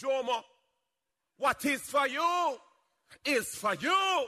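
put-on Jamaican-accented voice. Quoting what their mother would say: jamaican accent. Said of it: "as my mother would say in her Jamaican accent".

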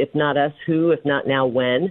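plain

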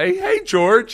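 very high, goofy, squeaky voice. Imitating how a player greeted an opponent: goofy, corny George Kittle imitation. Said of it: "George Kittle is just goofy and corny".

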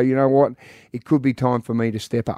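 ordinary delivery

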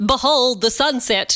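normal talking voice

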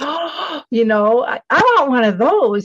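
put-on giddy, high, excited childlike squeal.

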